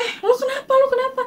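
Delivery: very high, loud, panicked shout.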